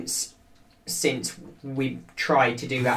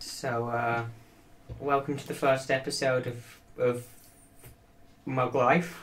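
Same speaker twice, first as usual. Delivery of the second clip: quiet, level, unvaried flat monotone; 7 dB quieter than usual. Host opens the podcast's first episode in a monotone voice. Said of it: "With your monotone voice".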